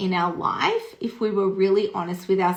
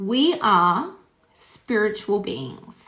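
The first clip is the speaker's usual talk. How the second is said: drawn-out, slow, careful, deliberate delivery. Sharing a revelation learned years ago: speaking slowly. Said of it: "I'm just gonna say it slowly".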